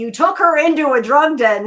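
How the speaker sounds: very loud, high, furious, pissed-off yell. Retelling what a character tells his father on the phone: imitating an angry character. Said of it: "he's pissed at his father 'cause he's like".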